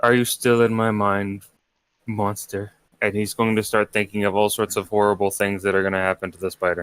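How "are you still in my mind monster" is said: muttering under the breath, lower and slower. During a tabletop game, a player voices his character muttering under his breath. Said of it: "start muttering under his breath".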